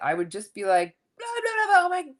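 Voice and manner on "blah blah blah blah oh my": total raging freak-out, way up high. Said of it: "totally freak out".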